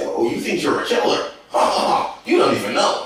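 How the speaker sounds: weird, strange put-on cartoonish character voice. Speaker acting out a man competing for attention, weird cartoon voice. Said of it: "he might use some weird voice".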